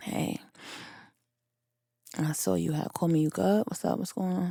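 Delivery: put-on drowsy voice, hushed, breathy, near whisper. Retelling finally calling him back after a whole day, in a fake sleepy voice. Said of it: "in a fake sleepy voice".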